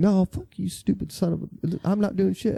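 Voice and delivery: high, loud yelled voice. A patrol officer recounts a driver yelling curses at the officer, imitating someone yelling curses. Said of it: "he was yelling like curse words and stuff at me".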